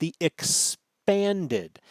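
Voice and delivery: expanded drawn out, slow and heavily stressed.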